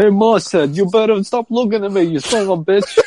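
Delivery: put-on Bronx accent. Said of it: "Oh, that's good".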